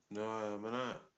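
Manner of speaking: slurred speech, words running together. Answering whether under the influence of alcohol or drugs: slurred speech. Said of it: "why is your speech slurred?".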